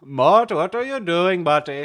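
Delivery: very loud, high, belted cartoon voice. Showing off voices they like doing, in a King Julian voice. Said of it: "I kind of like this voice, like King Julian".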